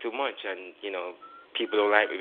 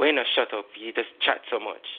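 put-on snappish male voice, higher pitch; 2 semitones higher than usual. Speaker retelling how a gentleman snapped at them mid-question: mimicking a man snapping. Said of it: "he just snapped at me".

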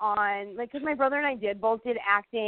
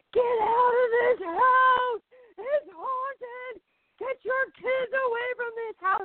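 very high-pitched screaming; 13 semitones higher than usual. Telling a haunted-house story, acting out an old couple's warning; retelling a scream. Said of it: "they're screaming".

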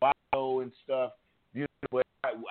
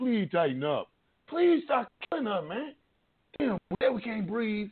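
acted-out, pleading, begging voice; 9 semitones higher than usual. Acting out radical reformists pleading, mock-begging. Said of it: "We're really begging".

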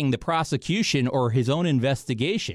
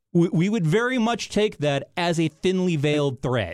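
ordinary talk, nothing marked

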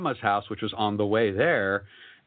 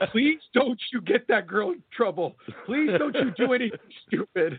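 very high, weepy, crying, pleading voice; 11 semitones higher than usual. Retelling grandma's tearful plea while handing over blankets: imitating grandma crying. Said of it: "she starts basically crying".

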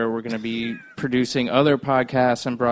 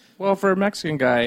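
playful, teasing, pitched-up ribbing tone; 8 semitones higher than usual. Joking with the other person about being smart, teasing. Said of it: "I'm teasing".

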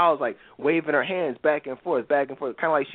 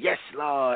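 put-on mocking woman's voice. Retelling a disruptive woman in church: imitating a woman mocking. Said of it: "making a mockery of it".

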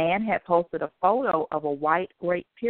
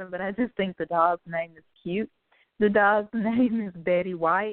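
giggly, laughing through the words, breaking into laughter; 2 semitones higher than usual. Sharing a news story about a dog, laughing while talking. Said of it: "I'm sorry if I start laughing".

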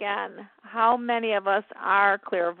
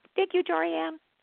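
very soft, light, high murmur; 9 semitones higher than usual. Speaker recreates a mother's thanks heard on a recording, in a very soft, light voice. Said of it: "in this very soft, light voice".

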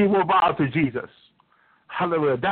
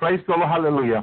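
usual speaking voice

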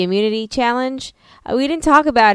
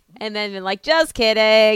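ordinary talk, nothing marked

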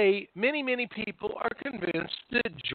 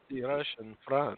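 hushed, creepy, spooky horror-film vampire voice; 7 semitones lower, 6 dB quieter than usual. Talking about a conspiracy theory, repeat the phrase in a vampire voice. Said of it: "that's the vampire voice".

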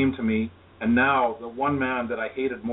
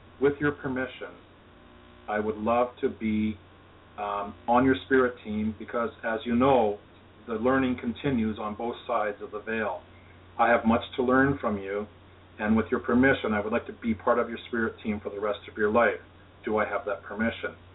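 normal talking voice

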